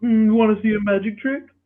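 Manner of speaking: cartoon frog voice. Retelling a video of Kermit the Frog on Omegle: imitating Kermit the Frog. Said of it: "And he'll be like".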